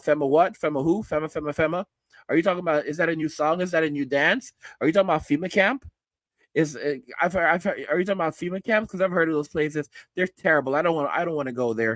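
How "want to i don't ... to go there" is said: ordinary talk, nothing marked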